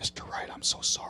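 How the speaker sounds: muttered under breath. Retelling what the judge said in court, imitating someone under her breath. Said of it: "under her breath".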